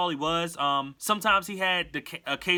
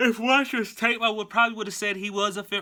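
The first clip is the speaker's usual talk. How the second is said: yawning mid-sentence while speaking; 3 semitones higher than usual. Assessing an Eagles fifth-round pick from watching his tape, yawning while talking. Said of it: "I keep yawning".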